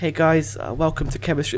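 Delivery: soft-spoken, gentle teacher voice. Speaker mimics a chemistry teacher who couldn't control the class, imitating teacher's soft voice. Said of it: "he had a really soft voice".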